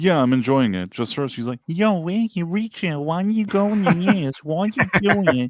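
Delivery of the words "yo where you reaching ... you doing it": strained, try-hard put-on Boston accent, high and slow. Critiquing a performer's acting this season, imitating her attempted boston accent. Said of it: "she's trying to do this kind of Boston accent".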